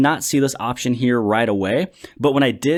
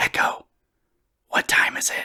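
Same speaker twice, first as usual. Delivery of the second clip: slow, soft, drawn-out unvoiced whisper. Asking Echo a question to test its whisper mode, whispered. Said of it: "the first time you actually whisper to that product".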